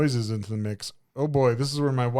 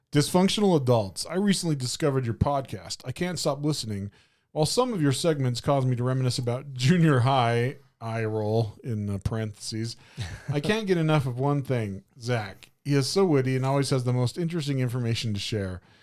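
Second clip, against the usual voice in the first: plain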